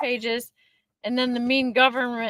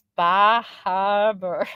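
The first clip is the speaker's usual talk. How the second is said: poorly faked accent without R's; 4 semitones lower, 3 dB louder than usual. Trying to show an accent you say you cannot imitate, use a bad put-on R-dropping accent. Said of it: "they don't say the R's".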